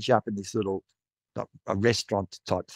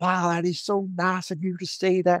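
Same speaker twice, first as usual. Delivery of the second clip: bad fake American accent, pitched up; 9 semitones higher than usual. Quoting the woman who collected the plate, in a terrible American accent. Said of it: "my terrible attempt at American accent".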